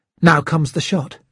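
ordinary delivery

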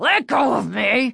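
raspy, deep, rumbling snarl. Narrator reading the dummy's line as it pulls away, raspy, deep rumbling snarl. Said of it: "he snarled in his raspy, deep rumble of a voice".

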